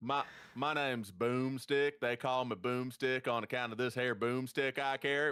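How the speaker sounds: hushed, extra-deep, thick put-on Southern accent. Retelling recording a line for a movie, fake deep Southern accent. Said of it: "my fake deep Southern where I got even deeper Southern".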